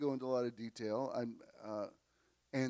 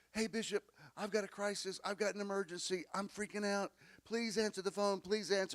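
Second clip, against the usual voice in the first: put-on, high, panicked, pleading tone; 8 semitones higher than usual. Replaying from memory a caller's answering-machine message, imitating a panicking caller. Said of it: "listening to you panicking".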